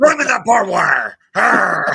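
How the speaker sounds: high, loud, rough barking. Imitating someone cheering a football tackle: Burgess Meredith impression. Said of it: "my best Burgess Meredith impression".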